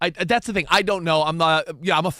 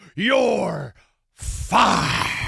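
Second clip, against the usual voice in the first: rough, creaky, rasping proclaiming voice. Quoting a famous catchphrase about a fired coach: Vince McMahon impression. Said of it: "to quote Vince McMahon".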